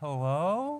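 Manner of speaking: mock nervous, timid, scared, uncertain little voice. Retelling how a little old lady called out in the hallway: imitating a quiet, scared voice. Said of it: "quiet and kinda scared".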